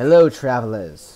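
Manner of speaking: very loud, huge, booming dragon voice. Storytelling, a dragon flies up and speaks in a booming Yui dragon voice. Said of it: "in this booming voice".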